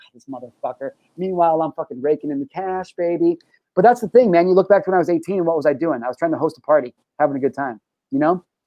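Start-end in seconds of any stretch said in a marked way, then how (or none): 0.0-0.9 acted-out, hushed, very soft, exasperated mutter. Retelling how coworkers reacted to the banter: imitating exasperated eye-rolling coworkers. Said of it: "rolling their eyes like".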